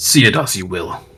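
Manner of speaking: annoyed. A character concedes losing a bout, then stomps off; angry. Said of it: "Why are you so angry?".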